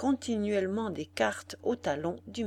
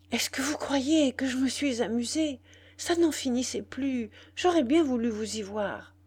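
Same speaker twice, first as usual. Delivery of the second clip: hushed, stammering, panting, out of breath, higher pitch; 4 semitones higher, 3 dB louder than usual. Young woman, hushed by the maid, answers; hushed, stammering, out of breath. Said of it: "baissant la voix, la jeune femme bégaya, haletante".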